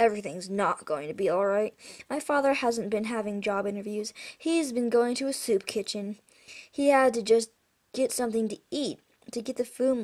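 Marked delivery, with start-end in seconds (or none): none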